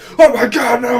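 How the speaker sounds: high, loud, dramatic cry, shouting.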